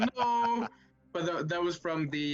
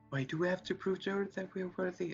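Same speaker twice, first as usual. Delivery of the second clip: whispering, higher pitch and quieter; 4 semitones higher, 5 dB quieter than usual. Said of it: "I'm just whispering that like Felix".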